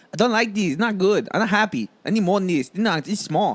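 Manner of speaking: put-on Chinese accent. Showing another speaker a put-on accent: put-on Chinese accent. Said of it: "you wanna hear my Chinese?".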